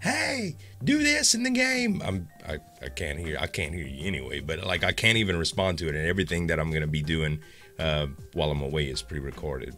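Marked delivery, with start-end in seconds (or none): 0.0-2.0 high-pitched mock yell, screaming. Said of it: "screaming at the, the monitor like".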